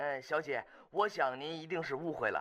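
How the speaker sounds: usual speaking voice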